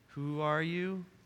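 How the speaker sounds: very feeble, faint, soft voice. Retelling the Bible story, the speaker voices Saul answering the loud voice, imitating Saul's feeble voice. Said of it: "very feeble voice".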